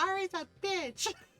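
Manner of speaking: put-on upset complaining tone. Retelling a daughter coming home and complaining: imitating an upset daughter. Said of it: "real upset about it".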